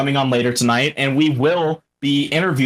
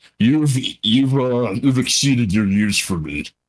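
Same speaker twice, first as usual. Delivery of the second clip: slow, bug-like alien villain voice; 2 semitones lower than usual. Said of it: "doing the the voice of that uh the guy the main bad guy".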